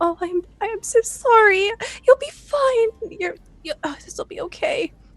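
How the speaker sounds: gentle, soothing, soft, high cooing. A game narrator voices Clover tending to the man she hit: Clover cooing softly. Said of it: "She's like cooing and saying".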